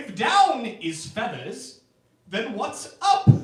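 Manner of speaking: high, loud, put-on British accent, baffled and confused. Speaker announces an impression, then delivers it: confused British man impression. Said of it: "my impression of a British man who is uh, confused".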